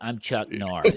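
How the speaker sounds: weak voice with zero authority. Showing how a star talked, without a commanding voice: Chuck Norris impression. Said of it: "He kinda talked like this".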